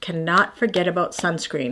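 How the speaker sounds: plain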